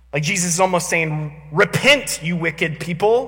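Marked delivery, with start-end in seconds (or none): 1.6-3.3 slow, stern, harsh voice, acted out. Describing how he used to hear Jesus's words of repentance, mock-harsh Jesus quote. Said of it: "like a harsh tone".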